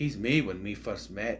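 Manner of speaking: put-on Scottish accent gradually slipping into the speech. Describing an actor's line take, say it as David Tennant with the Scottish coming out. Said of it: "The Scottish comes out".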